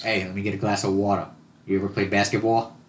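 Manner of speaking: casual, put-on New York accent. Riffing on accents, the speaker tries out how the accent goes: New York accent attempt. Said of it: "how does that accent go".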